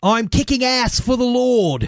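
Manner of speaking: put-on New Zealand accent, very high. Quoting a line from a zombie movie, in a New Zealand accent. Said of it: "that was my New Zealand accent".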